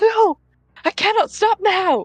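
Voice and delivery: very high yell at the top of her lungs. Voicing a character who wakes with a jolt: shouting at the top of her lungs. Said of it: "just shout out to the top of her lungs".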